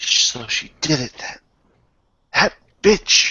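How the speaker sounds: slow, grumbled mutter under the breath. Game master voices a woman reacting to news, muttered under breath. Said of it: "mutters something under her breath".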